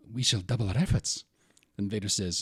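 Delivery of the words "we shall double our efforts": nervous officer voice. Voicing a scene from a movie: Moff Jerjerrod voice. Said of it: "Moff Jerjerrod says something like".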